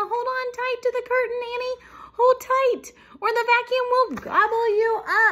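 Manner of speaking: shrill shriek, very high-pitched and loud. As a vacuum cleaner bursts in, one mouse warns the other, shrieking. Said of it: "shrieked Melissa".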